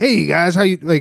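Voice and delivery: rattled-off DJ radio announcer voice. Imitating a Bitcoin podcast host opening his show: radio announcer voice. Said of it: "with the real radio-y voice?".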